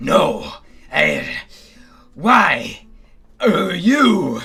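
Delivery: loud, swooping, bewildered, muddled demon voice. A game master voices a demon battling on a rocking bridge, confused demon voice. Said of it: "It sounds really confused".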